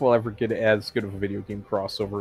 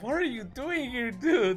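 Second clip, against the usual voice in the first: voiced concerned, worried character voice; 5 dB quieter than usual. Voicing a concerned-looking standee: voicing concerned Tails. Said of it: "He's just like".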